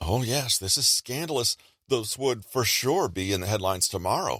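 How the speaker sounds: heavily sarcastic, teasing tone. Showing how to answer a colleague's teasing about a gaffe: sarcastic. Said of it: "you may reply with a sarcastic".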